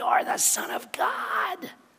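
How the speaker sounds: very slow, breathy, whispered demonic voice. Retelling a bible scene, voicing a demon-possessed man: put-on demonic voice. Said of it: "That's my best demonic voice right there".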